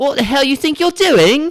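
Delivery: put-on London accent, very high and very loud. Trying out British slang, in a London-type accent. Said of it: "maybe like a little London type thing".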